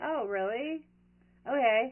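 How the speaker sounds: put-on cool, nonchalant, unfazed, flat tone. Retelling how a man reacted when told of a murder, imitating a calm, cool reply. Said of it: "calm and cool, and he was like".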